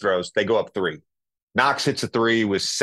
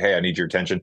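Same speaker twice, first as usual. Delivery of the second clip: mock-stern raised voice, lower and faster; 4 semitones lower than usual. A youth coach shows how he addresses his young players, retelling a stern raised voice. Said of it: "raise my voice occasionally in a very like serious way".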